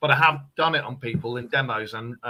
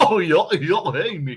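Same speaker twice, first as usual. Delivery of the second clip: animated dog voice; 3 semitones higher than usual. Showing three cartoon voices on request: Goofy voice.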